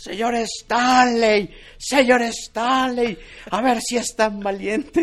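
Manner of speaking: mock, very high, loud, drawn-out yell.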